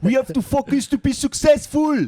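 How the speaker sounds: put-on Belgian French accent, pitched very high. Retelling what a Belgian boss always said: French-speaking Belgian accent. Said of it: "That was a good accent".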